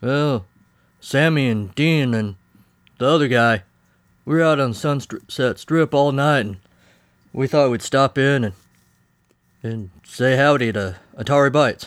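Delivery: bad, put-on cowboy voice. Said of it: "why are you talking like a bad imitation of a cowboy".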